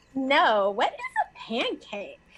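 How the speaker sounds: put-on swooping valley girl voice. Improvising a character in a playful bit, valley girl voice. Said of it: "Oh, you're a valley girl".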